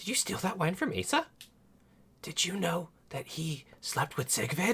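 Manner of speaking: tiny, very high-pitched little whispered voice. Whispering into a character's ear as Yomi, in a little voice.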